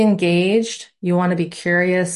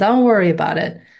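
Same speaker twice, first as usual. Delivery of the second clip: put-on Italian mobster accent. Course instructor reassures students worried about the weekly lessons, italian mob boss voice. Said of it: "I put my Italian mob boss voice on".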